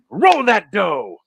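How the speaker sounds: loud, high-pitched, domineering bossy voice. Playing the chef who scolds a player at the table: voicing the chef. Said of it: "throws them back down on the table".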